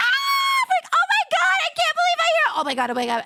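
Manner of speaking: mock, very high, swooping, overwhelmed freak-out. Retelling first stepping into Anime Expo, acting out freaking out. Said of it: "I literally freaked out".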